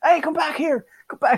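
very high, acted-out drunk man yelling. Retelling how a drunk man shouted down the street: imitating a drunk man shouting. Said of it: "he started shouting down the street at me".

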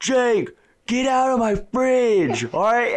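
mock fed-up, very high, annoyed yell. Retelling how Alex answered Jake about his fridge: imitating someone yelling. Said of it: "like, yells it to him".

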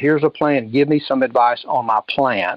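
ordinary delivery

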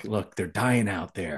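imitated whisper. Retelling a scene where a character warns the doctor: imitating a whisper. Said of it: "Paris is now whispering to the doctor".

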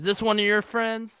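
high, called-out yell in a character voice. In a role-play scene, the player's character calls out to Ace, yelling in character. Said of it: "That's when I yell out to Ace".

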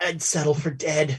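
put-on strained voice. Recapping a scene, voicing a line spoken in it, mimicking a strained voice. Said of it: "a strained voice says".

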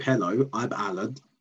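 plain

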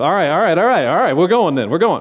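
accelerating, revved-up delivery.

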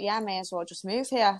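ordinary delivery

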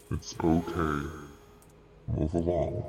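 absolutely demonic put-on character voice. Player character telling a man to move along and go away, demonic voice. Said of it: "this voice sounds absolutely demonic".

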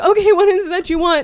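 mock, high, strained speech through forced laugh. Retelling a worker's question to a creepy customer: imitating a woman forcing a laugh. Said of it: "trying to laugh".

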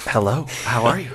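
bedroom-style voice.

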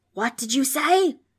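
screechy, distorted ghost voice. Reading a story aloud, the ghost answers Frank, in a screechy, distorted ghost voice. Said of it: "Screeched the ghost. Its voice was distorted and awful".

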